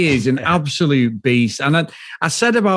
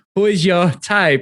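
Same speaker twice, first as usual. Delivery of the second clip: terrible put-on Colombian accent; 4 semitones higher than usual. Trying out the accent someone suggested: bad Colombian accent. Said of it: "so shall I do a Colombian accent".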